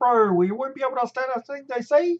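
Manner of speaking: put-on, very high, loud New Zealand accent. A Kiwi demonstrating how other Kiwis can sound, Kiwi accent impression. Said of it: "accents of Kiwis that sound a little bit like this".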